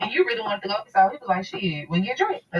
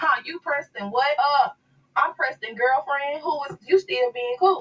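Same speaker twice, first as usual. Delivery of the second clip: put-on laughing while talking, higher; 6 semitones higher than usual. Retelling a phone call where the other person answered: imitating someone laughing while talking. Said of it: "Person on the other line started laughing".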